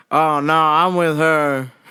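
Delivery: put-on disappointed tone. Retelling a man's reply when asked if he needed help, imitating a disappointed voice. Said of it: "I could hear the disappointment in his voice".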